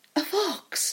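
very high, sudden, excited outburst. Reading a story aloud, voicing a young woman's sudden answer: cried out. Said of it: "she cried".

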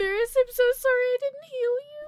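very high, loud, teary crying voice. Voicing a character apologizing to Maris in tears: crying in character. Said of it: "fat tears start rolling down her face".

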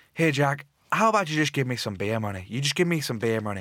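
put-on Irish accent. Retelling the irish fan asking for beer money: put-on irish accent.

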